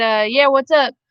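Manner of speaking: put-on really heavy drawling accent, laid on thick. Retelling answering a teacher who called out, imitating own heavy drawl. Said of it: "real heavily in my draw".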